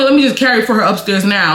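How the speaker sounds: ordinary delivery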